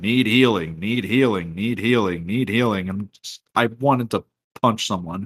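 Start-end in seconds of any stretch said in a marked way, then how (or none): 0.0-2.9 announcer voice callout, repeated over and over. Speaker recalling a repeated in-game call-out, in the Paladins announcer voice. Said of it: "this announcer's voice just going".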